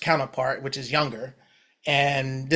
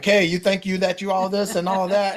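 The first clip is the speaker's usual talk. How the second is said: put-on high-pitched, challenging yell; 6 semitones higher, 4 dB louder than usual. Describing the album's opening, the speaker acts out yelling at the nephew; retelling yelling at nephew. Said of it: "I'm pretty much like yelling at him like".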